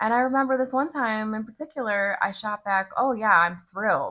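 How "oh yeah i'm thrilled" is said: mock sarcasm, loud, heavy, no subtlety. Retelling a reply to people offering congratulations: imitating own dripping sarcasm. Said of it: "dripping sarcasm, full eye roll".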